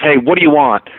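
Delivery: ordinary delivery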